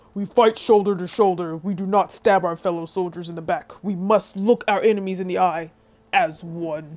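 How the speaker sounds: attempted deep, low-pitched voice. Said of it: "I wish I could do the deep voice".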